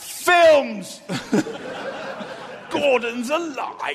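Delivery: very loud, high, booming bellow. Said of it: "employ Brian Blessed to stand in the studio and shout".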